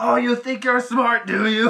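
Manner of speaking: weird, very loud, high cackling voice. Retelling a man cackling and calling people names, imitating his weird cackling voice. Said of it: "like this weird, like, cackle laugh voice".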